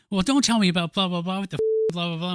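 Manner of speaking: mock, lightly yelled, mild ranting delivery. Asked about Nora Dunn in the film, the speaker acts out her scene: imitating Nora Dunn yelling. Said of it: "she's yelling like".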